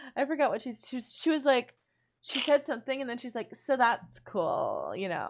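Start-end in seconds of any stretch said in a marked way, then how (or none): 3.5-4.9 slow, low, sing-song drawl. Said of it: "why do you sound like [name]".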